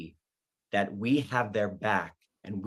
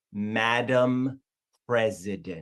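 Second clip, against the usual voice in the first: very slow, painstaking, drawn-out word-by-word reading. Mock tutorial on pronouncing her name, said very slowly. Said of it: "You have to say it very slowly".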